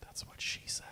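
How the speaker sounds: barely audible, very quiet whisper. Slipping in a quick joke during the talk, said very quietly. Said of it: "You said that very quietly".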